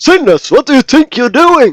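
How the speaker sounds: loud, swooping hollering yell. Storyteller recalls the voice given to the captain of the guard: imitating a yelling guard captain. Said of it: "he yelled all the time".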